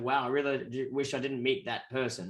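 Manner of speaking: ordinary talk, nothing marked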